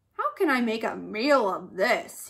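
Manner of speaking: grumbled, put-out, grumbling tone. Narrator voicing the lion in an animal story, grumbling. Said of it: "he grumbled".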